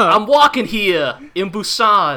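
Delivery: put-on New York Brooklyn accent. Recalling their Busan English dub jokes, in a Brooklyn accent. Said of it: "given either a Texan or a Brooklyn accent".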